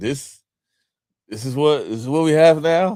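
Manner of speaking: loud, let-down, dismayed, disappointed complaining tone. Retelling a coach's reaction to the team: imitating Nelly's disappointment. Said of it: "I saw a lot of Nelly's disappointment".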